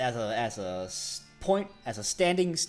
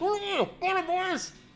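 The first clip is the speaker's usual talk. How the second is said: muffled, much higher voice. The narrator voices someone behind a door locked from outside, muffled voice. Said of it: "A muffled voice says".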